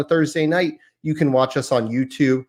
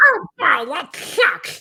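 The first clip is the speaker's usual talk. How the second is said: really bad, high, loud cartoon duck voice. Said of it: "a really bad Donald Duck impression".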